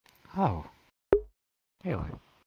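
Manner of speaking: high, swooping, disappointed-sounding surprised reaction. Reacting to hearing another is preferred as whip: sounding disappointed. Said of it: "you sound disappointed".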